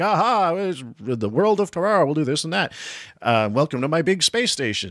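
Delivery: big booming voice. Speaker imitates the genius scientist dad in a deleted scene, in Howard's big booming voice. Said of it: "with his big booming voice".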